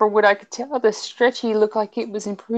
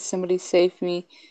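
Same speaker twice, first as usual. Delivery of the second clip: plain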